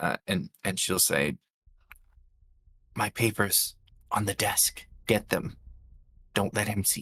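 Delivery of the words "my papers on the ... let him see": whispered through pain, pained and hushed. Voicing a wounded character pulling someone close: whispering through pain. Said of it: "through the pain, she's gonna try and do her best to kind of whisper".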